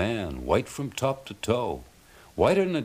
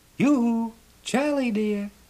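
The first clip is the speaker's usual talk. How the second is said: very high, clear, sweet, tinkly little voice; 14 semitones higher, 4 dB louder than usual. Narrating a tale, a voice calls to charlie from the gate, pretty tinkly little voice. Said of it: "tinkly and clear, a pretty little voice says".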